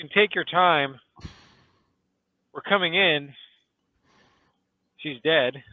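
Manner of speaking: catching breath. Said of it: "catching my breath".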